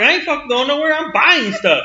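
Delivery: high, stubborn, defiant yelling. Retelling being at the gas station: retelling yelling at a cop. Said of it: "I'm sitting there yelling at the cop".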